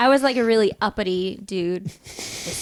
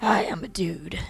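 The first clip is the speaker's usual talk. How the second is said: rough, gruff, deep guy voice. A player trying out a gruff soldier voice, imitating Fletcher's deep voice. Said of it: "I'm just doing Fletcher's voice right now, like your your deep guy voice".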